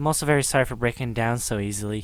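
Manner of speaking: plain reading voice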